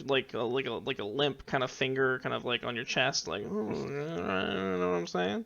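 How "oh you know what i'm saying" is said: put-on creaky, high, slow, tipsy drunken old-lady drawl. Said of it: "drunk old lady".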